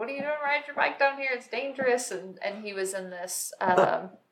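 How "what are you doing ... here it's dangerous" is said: high, rushed, hollered yell. Recalling a guy who shouted at them while they biked, retelling a yell. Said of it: "this guy was like yelling at me".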